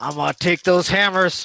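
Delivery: through clenched teeth. A player's character looks at a beat-up foe and speaks through gritted teeth. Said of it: "through gritted teeth".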